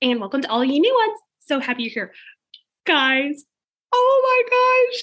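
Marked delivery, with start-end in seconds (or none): 1.5-5.0 very high, very slow, overjoyed, near tears. Speaker welcoming new subscribers, excited and almost crying. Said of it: "I'm almost crying right now. I'm just so excited".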